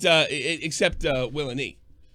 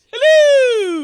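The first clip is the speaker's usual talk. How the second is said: put-on very high, shrill, loud old English woman voice; 12 dB louder than usual. Showing the voice heard when looking at a face: old English woman voice. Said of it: "Like an old English woman".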